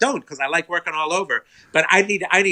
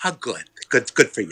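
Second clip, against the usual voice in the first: patronizing, condescending, dismissive tone; 5 semitones lower than usual. Retelling own reply to news of a written pilot: imitating own condescending tone. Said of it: "I was so condescending".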